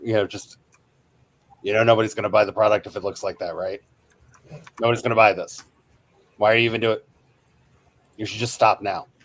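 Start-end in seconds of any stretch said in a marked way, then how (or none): 1.6-9.0 low, deep, rough, gravelly stern growl. Recalling a Phantom Menace effects artist's criticism, imitating his deep gravelly voice. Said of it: "I can just hear his deep, kind of gravelly voice going".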